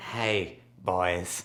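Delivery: put-on very deep, soft, hushed old lifelong-smoker woman's voice. Greeting the boys, in the voice of an old lifelong-smoker lady. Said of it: "an old lady who's been a smoker all her life".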